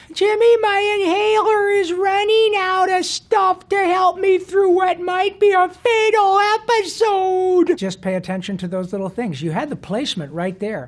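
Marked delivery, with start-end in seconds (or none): 0.2-7.8 high-pitched voice with consonants dropped. Showing how Carl speaks, with the lazy L: Carl voice. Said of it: "the way Carl behaves and how he speaks".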